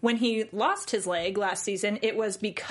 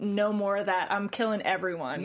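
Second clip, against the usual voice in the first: ordinary talk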